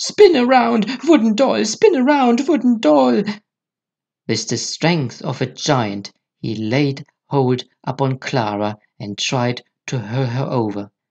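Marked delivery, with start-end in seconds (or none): 0.0-3.2 piercing, shrill, very high madman's cry. Reading a story aloud, voice the man who shouts at the wooden doll: piercing shout. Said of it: "he began to shout in a piercing voice".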